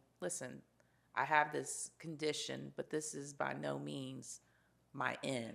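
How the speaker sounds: ordinary delivery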